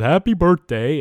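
high-pitched, loud, festive calling out. Retelling the cartoon's plot, quoting the snowman: Frosty the Snowman voice. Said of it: "he talks like this, and he says".

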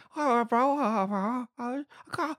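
slow, high, garbled, thick-mouthed mumbling. Imitating an actor's line from a film: Benicio del Toro mumble like after dental surgery. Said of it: "Benito del Toro in New Suspects going".

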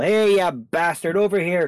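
very slow, loud, drawn-out, jeering, taunting shout. Player character taunting a gargoyle to draw its attention, shouting a taunt. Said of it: "I'm just going to shout at the guy".

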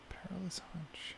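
hushed, soft, breathy bedtime whisper. Guessing a puzzle answer with the others: whispering. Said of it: "Just whispering that".

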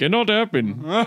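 put-on Indian accent.

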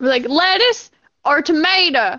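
put-on country voice. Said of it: "You sound like those country people from, uh, SpongeBob".

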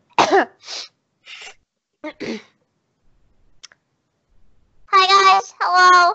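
loud put-on gnome character voice. Asked what it sounds like, the speaker warms up and greets everyone in a gnome voice. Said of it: "Oh god, it's that voice".

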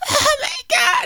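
shrill, very high, very loud shriek. Retelling young wrestlers put in a painful move: imitating someone screaming.

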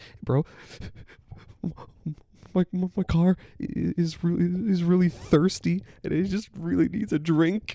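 mock near-tearful quiver. Speaker acts out a man asking a bro for help, imitating a quivering voice. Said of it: "He's quivering".

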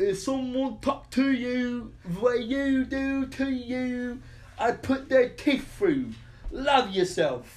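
put-on British accent, very high and loud. Speaker quoting a line to the group, in a British accent. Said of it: "whenever we go into a British accent".

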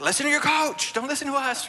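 sheepish yelling, high and loud.

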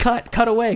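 screamed, high and pleading. Recalling watching with Luke as the camera failed to cut away, retelling a scream. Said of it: "Luke and I were just like screaming".

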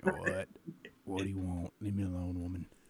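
deep, hoarse, phlegmy voice. Showing the voice his wife likes: deep phlegmy voice. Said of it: "my voice is deep".

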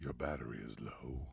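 very low, silky, smooth, soft voice. Describing earbuds, imitating their voice prompt: Raycons earbuds voice.

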